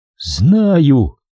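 whispering. A woman answers a man's cautious question about a skull; whispered. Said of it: "прошептала Ильяна".

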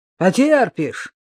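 exasperated, high, irritated shouted outburst. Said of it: "раздраженно выкрикнул Поль".

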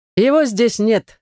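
mocking, scoffing tone. The conspiring mage answers the heir Redger in a standoff, mocking. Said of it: "замечает маг насмешливо".

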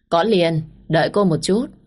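ordinary delivery, nothing marked

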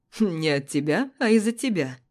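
words spoken through laughter. On the phone, her partner answering her complaint, laughing while speaking. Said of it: "смеется мой варвар".

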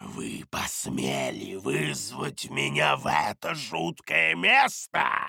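low, rough, rasping, hissed demon creature voice. Reading a fantasy story aloud, voicing the summoned creature, hissing creature voice. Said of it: "прошипело существо".

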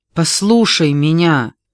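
shouting out, yelling. Facing Daisy, he shouts at her. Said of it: "выкрикнул он".

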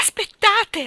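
very high, loud cry with voice cracking. Narrator voicing Miss Andrew calling to a departing driver: crying out, voice breaking. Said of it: "Gridò con voce rotta".

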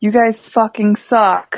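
mock half-shouted, mildly yelled jab. Retelling yelling at the guys pulling ropes: retelling own yell. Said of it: "And so I yelled at them".

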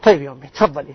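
put-on, reluctant, annoyed delivery through a sigh. Acting out a son asked by his mother for an errand: imitating a reluctant son's sigh. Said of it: "هذا التنهد هو التأفف".

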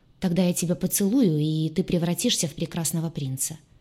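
ordinary delivery, nothing marked

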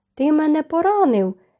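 high, sudden exclamation, crying out. Narrator voicing a man regaining his balance after a blow, exclaiming. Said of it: "вигукнув Колін".

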